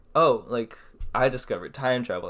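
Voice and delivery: ordinary talk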